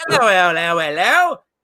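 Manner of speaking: put-on British accent. Speaker demonstrates what a woman's voice did not sound like, put-on British accent. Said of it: "I like the British accent".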